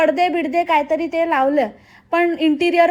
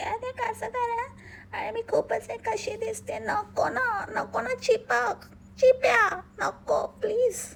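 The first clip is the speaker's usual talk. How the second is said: mock delicate, sugary, dainty voice; 5 semitones higher, 11 dB quieter than usual. Mocking how someone else talks and acts: put-on sweet dainty voice. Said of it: "असं तर मी पण आवाज काढू शकते".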